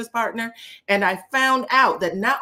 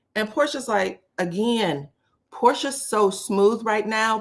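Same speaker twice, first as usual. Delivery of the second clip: ordinary talk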